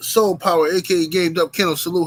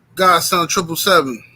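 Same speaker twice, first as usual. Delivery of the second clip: plain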